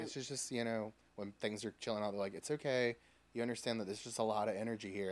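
ordinary delivery

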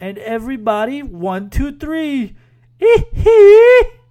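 belted high, slow and swooping. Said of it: "I'm gonna do a horrible impression".

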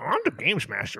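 hushed, greedy, icky villain voice, very soft. Performers improvise a scene, trying out the character: greedy, icky Games Master voice. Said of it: "He was kind of like Skeletor".

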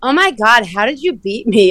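really slow, drawn-out talking. Retelling what a faster runner said at the finish line: imitating someone talking really slow. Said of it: "she talks really slow and she was like".

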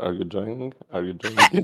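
mock constant whispering. Joking that the others kept pressuring with a constant whisper: imitating a constant whisper. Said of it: "constant, uh, whisper".

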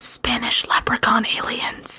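secretive, barely voiced, hushed conspiratorial whisper. Joking about starting a whisper campaign to spread a theory, a speaker is whispering. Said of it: "Why are we whispering?".

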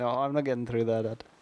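put-on dog voice. Voicing the dog refusing to squeeze through a hole: voicing Goose the dog. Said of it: "He's like".

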